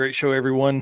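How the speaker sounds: ordinary delivery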